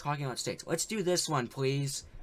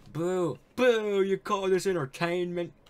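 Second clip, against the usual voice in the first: bad haunting ghost voice, higher and louder; 5 semitones higher, 6 dB louder than usual. Voicing a haunting old business partner in the game: terrible ghost business partner voice. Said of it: "It's probably a terrible voice".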